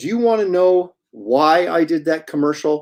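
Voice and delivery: acted, very stern, severe and reproachful tone. Retelling what a man asked the speaker at a silent table, mock-stern question. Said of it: "very sternly".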